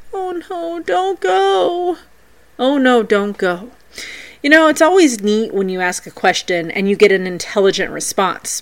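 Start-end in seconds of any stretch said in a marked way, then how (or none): 0.1-3.7 mournful and sad, very high and very slow. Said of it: "saying in a sad voice".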